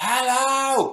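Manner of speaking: very high-pitched, drawn-out, shouted hello. Retelling how they had to shout with quiet microphones: imitating Dan shouting. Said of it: "so Dan was like".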